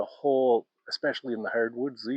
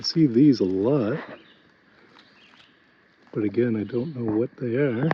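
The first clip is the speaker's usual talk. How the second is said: heavy, hard breathing while talking, louder; 6 dB louder than usual. Walking up while filming berries and leaves: heavy breathing while talking. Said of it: "Sorry for the heavy breathing".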